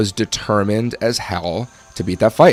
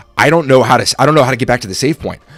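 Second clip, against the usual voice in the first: put-on panicked voice; 3 semitones higher, 4 dB louder than usual. Retelling being told to shut off the game: imitating own past panic. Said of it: "I'm panicking because I'm like".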